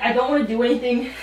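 normal talking voice

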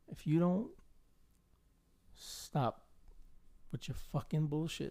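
calm menacing tone. Showing how to confront someone to their face: calm threat. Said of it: "in his face just calmly and be like".

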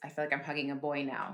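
normal talking voice

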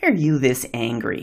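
low, judgmental, accusatory, dressing-down tone. Showing how not to ask a question, the speaker uses an accusatory, judgmental tone. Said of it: "a tone of voice that is accusatory or dripping with judgment".

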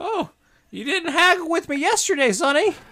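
very high, loud hag voice. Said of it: "I will only pay three silver".

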